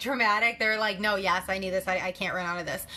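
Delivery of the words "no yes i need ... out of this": ordinary talk, nothing marked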